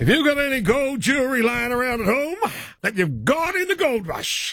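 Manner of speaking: put-on gold-digger character voice, pitched very high. Reading an ad-style bit, speaking in your gold digger character voice. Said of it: "That was my gold digger's bloody voice there".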